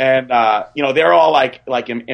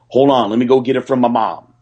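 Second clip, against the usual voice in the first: imitated Southern accent. Retelling what someone said leaning in the car window: P J Brown impression. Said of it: "give us the P J Brown impression".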